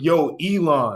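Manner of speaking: put-on youthful slangy voice. Mocking a politician who talks like she's nineteen online: imitating AOC talking like she's nineteen. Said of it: "talking like she's nineteen on the fucking social media apps".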